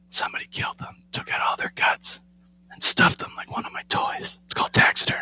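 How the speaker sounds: put-on breathy, soft, hushed little-girl whisper. Retelling a daughter's words in a taxidermy room: imitating someone whispering. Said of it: "I don't love that you're whispering".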